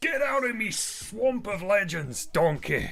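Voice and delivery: cartoon swamp ogre voice. Welcoming a viewer to the Hall of Legends, Shrek voice. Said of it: "I'll do Shrek then".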